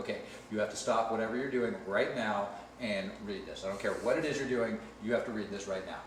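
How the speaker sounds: normal talking voice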